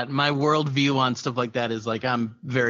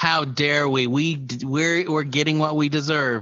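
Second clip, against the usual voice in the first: ordinary delivery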